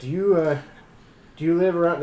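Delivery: heavy, thick Irish brogue. Retelling a guy at a takeout place trying to make friends, thick irish accent. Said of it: "thick Irish accent".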